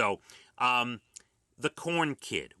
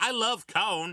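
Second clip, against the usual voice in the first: put-on cute child voice, higher pitch; 9 semitones higher than usual. Telling another speaker about a seven-year-old who says corn as cone: Corn Kid voice. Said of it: "he's got this really cute accent".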